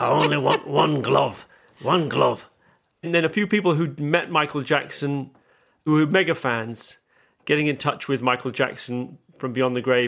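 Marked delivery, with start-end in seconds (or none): 0.0-2.5 rough, gravelly acted voice. Retelling a psychic's live show, imitating Derek Acorah's gravelly voice. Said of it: "he had a gravelly voice".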